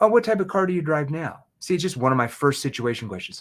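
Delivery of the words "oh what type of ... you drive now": curious, inquisitive tone with rising pitch. Teaching car sales, the speaker demonstrates asking a prospect in a curious tone. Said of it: "I'm asking that in a curious tone".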